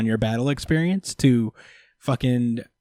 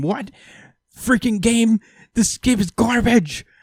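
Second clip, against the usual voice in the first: mock, shrill, high-pitched raging yell; 10 semitones higher, 3 dB louder than usual. Retelling a character's reaction to a game: imitating yelling at the screen. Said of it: "he's just yelling at the screen".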